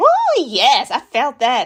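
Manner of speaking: very slow, sing-song, swooping, fawning eager gush. Retelling how the podcast interviewer reacted, mocking the interviewer's eager agreement. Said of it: "she's snapping her fingers and like".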